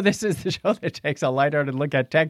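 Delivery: ordinary delivery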